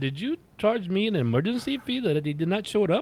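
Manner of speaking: put-on Indian accent. Retelling an exchange with a woman, the speaker puts on an indian accent. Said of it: "I so I put the accent on".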